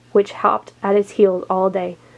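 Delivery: plain reading voice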